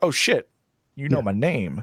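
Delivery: ordinary delivery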